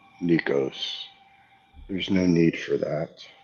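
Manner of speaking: calm, gentle, soothing voice. In a role-playing game, a player speaks in character to Nikos: calm, soothing voice. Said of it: "In a calm, soothing voice".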